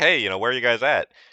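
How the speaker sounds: acted scared yell, calling out loudly. Retelling being scared in a dark facility, calling out for buddies, retelling a scared yell. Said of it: "I'm yelling out for him like".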